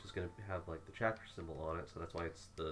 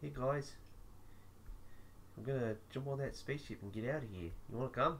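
mumbling, slightly pitched-up alien voice; 7 semitones higher than usual. Talking to viewers during a break, in a soft mumbling Korg voice. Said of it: "mumbling with a very soft voice".

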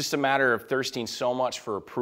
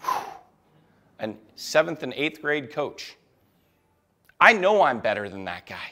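ordinary talk

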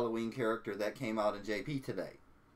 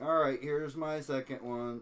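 ordinary talk

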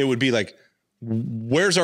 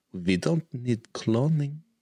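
put-on German accent; 4 dB quieter than usual. Voicing Palpatine's line about cloning: Frau Farbissina German voice. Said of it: "I don't know why she's German".

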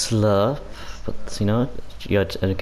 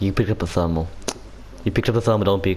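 normal talking voice

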